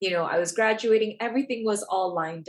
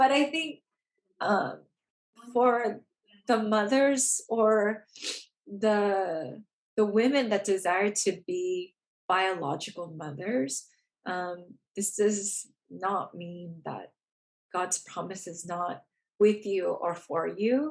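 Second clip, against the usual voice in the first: teary voice, on the edge of crying. A speaker, having just said they're getting teary, keeps talking: getting teary. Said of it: "I'm like getting teary".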